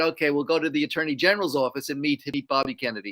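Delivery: ordinary delivery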